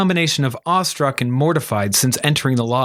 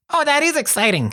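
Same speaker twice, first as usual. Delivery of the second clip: very high, squeaky, chittering chipmunk voice; 11 semitones higher than usual. Narrator reads Welk, meeting newcomer Marie, in a chittering chipmunk voice. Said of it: "he chittered in a voice like a chipmunk".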